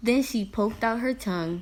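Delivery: ordinary delivery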